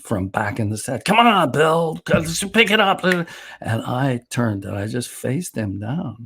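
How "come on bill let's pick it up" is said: high, needling, teasing razz. Retelling a director razzing him from the back of the set: imitating someone razzing. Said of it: "Jim started to razz me".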